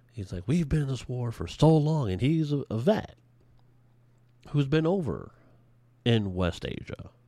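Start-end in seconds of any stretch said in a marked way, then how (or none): 0.5-2.1 high, very excited, exuberant fired-up speech. Imitating a candidate talking about the war: imitating an exuberant speaker. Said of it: "very exuberant".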